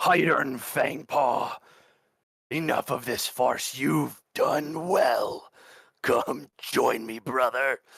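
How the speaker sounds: booming, thunderous, rolling voice. A voice calls across the clearing to a character, rolling like thunder. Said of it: "His voice rolls across this clearing like thunder".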